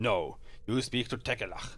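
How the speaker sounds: hissed, hissing monster voice. Game master voicing a hissing Abishai answering a player, hissing creature voice. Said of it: "The Abishai emits a series of hisses".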